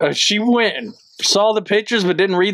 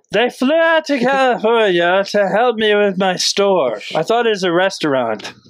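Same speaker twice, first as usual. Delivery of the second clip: silly, put-on French Canadian accent. Doing a comedy bit as a French Canadian character, in a stupid French Canadian accent. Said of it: "This is how they sound in French Canadian".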